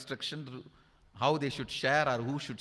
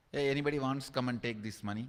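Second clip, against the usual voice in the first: usual speaking voice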